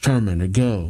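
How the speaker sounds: usual speaking voice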